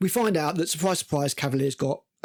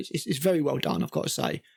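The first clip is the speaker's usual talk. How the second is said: normal talking voice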